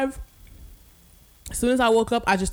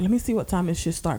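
ordinary talk

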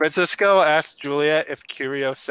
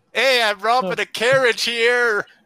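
put-on loose, half-formed New York accent, pitched up; 7 semitones higher than usual. A robber in a role-play, robbing a carriage: vaguely New York accent. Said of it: "vaguely New York sounding accent".

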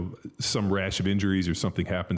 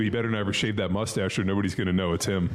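ordinary delivery

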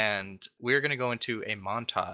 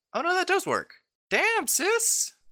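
astonished, very high-pitched, swooping surprised voice; 4 dB louder than usual. Reacting after finding the other person's solution works, surprised. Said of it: "You sound surprised".

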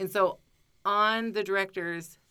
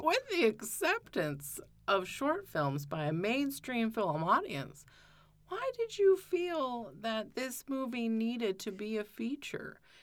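put-on pretentious, affected, swooping highbrow voice; 4 semitones higher, 5 dB quieter than usual. Retelling a question the speaker once asked her: put-on pretentious voice. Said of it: "let me put on my best pretentious voice".

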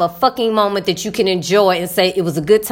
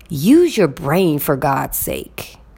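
put-on mutter under breath, lower; 4 semitones lower than usual. Retelling what the roommate said about the driver: imitating muttering under breath. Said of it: "under her breath".

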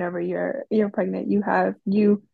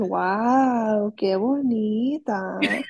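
sarcastic, couldn't-care-less, drawn-out wow. Imitating how Camila says something now: imitating Camila sounding sarcastic. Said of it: "That sounds so sarcastic".

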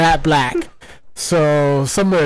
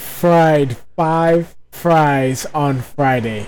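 slow, careful, deliberate tongue twister, word by word. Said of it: "But try saying".

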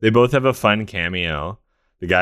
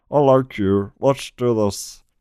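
slow, drawn-out, pitched-up drawl; 5 semitones higher than usual. Acting out what a producer says to a comedian's son: Snape-like impression. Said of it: "That sounded more like Snape".

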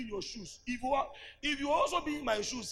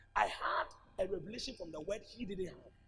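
normal talking voice

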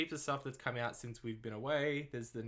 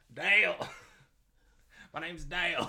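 terrible put-on Australian accent, loud and high; 5 semitones higher, 7 dB louder than usual. Quoting Step Brothers after a name comes up, as Dale in a horrible Australian accent. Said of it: "A horrible Australian accent".

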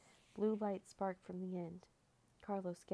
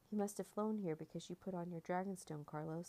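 plain reading voice

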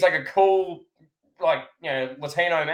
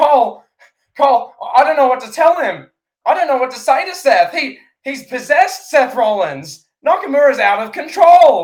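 very loud, flustered, at a loss, pitched up; 9 semitones higher, 9 dB louder than usual. Retelling a commentator's helpless answer: imitating Corey Graves flustered. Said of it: "And Corey, clearly no thought to say, he was like".

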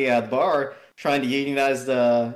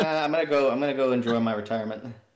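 normal talking voice

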